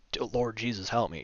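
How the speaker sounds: play-acted frantic, panicked shout. Retelling a nightmare where a figure attacks: retelling a scream for help. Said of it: "And then I scream out".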